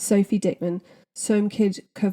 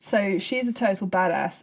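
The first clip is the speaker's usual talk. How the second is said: ordinary delivery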